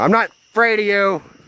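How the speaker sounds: very high, loud yell. Scared while filming, shouting at whatever might be in there, yelling loudly. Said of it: "I'm yelling loud".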